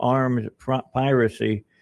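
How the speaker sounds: ordinary delivery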